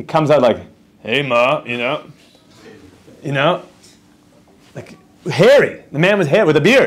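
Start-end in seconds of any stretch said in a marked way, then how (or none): 1.0-3.6 very slow, deep put-on voice. Joking about a baby born hairy and talking right away, imitating a deep voice. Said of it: "like a deep voice from the second he came out".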